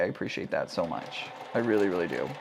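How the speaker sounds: very quiet, flat, half-hearted, insincere tone. Thanking a viewer for a gift, sounding low energy and insincere. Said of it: "That sounded very disingenuine".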